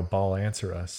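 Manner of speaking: ordinary talk, nothing marked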